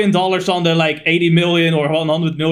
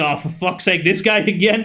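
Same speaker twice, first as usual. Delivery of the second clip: ordinary talk, nothing marked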